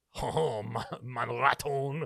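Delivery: put-on French accent. Joking with a co-host near the end of a show, put-on french accent. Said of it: "Your French accent is more insulting".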